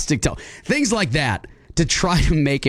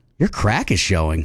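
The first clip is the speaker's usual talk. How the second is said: very low, flirtatious delivery; 9 semitones lower than usual. Taking a turn in a say-it-in-a-tone game: flirty. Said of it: "Say it flirty".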